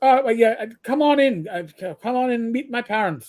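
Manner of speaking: heavy, broad, thick Irish brogue, halting and stumbling. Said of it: "with a thick Irish brogue".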